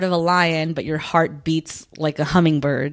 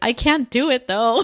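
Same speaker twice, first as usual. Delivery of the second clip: put-on tearful, blubbering wail, high and slow; 6 semitones higher than usual. Retelling a scene where she starts bawling: imitating someone bawling. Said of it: "then she starts bawling and she's like".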